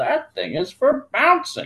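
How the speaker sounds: very high, croaking toad voice. Narrator reads Tomatoed answering Pugtato by the puddle, croaky Tomatoed voice. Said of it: "he croaked".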